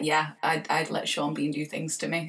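ordinary delivery

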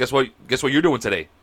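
ordinary delivery

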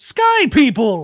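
loud, booming voice that carries. Narrator voicing Tarla the Goliath calling out from around the tent: booming Tarla voice. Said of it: "you hear a booming voice say".

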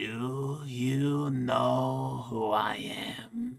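half-whispered, very slow and drawn out. A powerful Nosferatu leans in and half-whispers in your ear, Baba Yaga half-whispering. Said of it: "You know enough about vampires coming and going that you are pretty sure that this is Baba Yaga. One of the most powerful Nosferatus alive".

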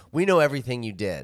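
ordinary delivery

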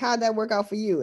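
normal talking voice

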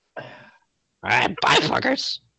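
very high, scratchy, creaky talking-bird voice. Voicing a raven that says goodbye and flies off: raven character voice. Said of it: "As he flies off".

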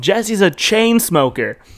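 high, yelled-out voice. Retelling yelling to a friend whose mom could hear: imitating own past yell. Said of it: "and I yelled".

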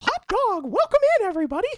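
squeaked high and loud with swooping pitch. Podcast host describes hearing their own voice come out; Mickey Mouse voice. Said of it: "who's this Mickey Mouse bitch".

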